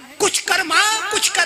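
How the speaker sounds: insistent delivery.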